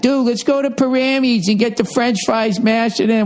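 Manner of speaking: high, put-on Boston accent. Speaker announcing added tour dates, slipping into a Boston accent. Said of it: "Why am I doing a Boston accent?".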